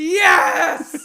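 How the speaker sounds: mock jubilant cheer, high, loud and laughing.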